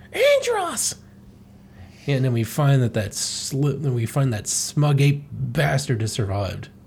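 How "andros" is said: very high, frightened, scared squeal. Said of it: "Slippy's, like, all, uh, scared, and he's like".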